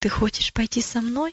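ordinary delivery

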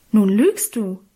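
outraged, indignant cry. In a read story, the narrator cries out at the other speaker: indignant exclamation. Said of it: "rief ich entrüstet".

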